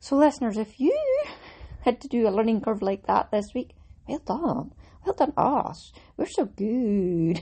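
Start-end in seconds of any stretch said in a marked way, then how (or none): 5.0-7.4 silly, slow, drawn-out delivery. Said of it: "I'll stop being silly".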